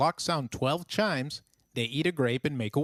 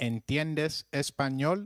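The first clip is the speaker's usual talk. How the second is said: normal talking voice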